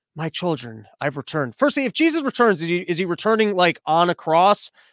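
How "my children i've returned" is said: very soft, low voice. Imagining Jesus returning to troll everyone, the speaker voices him: Jesus in a very soft voice. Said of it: "Jesus has like a very soft voice".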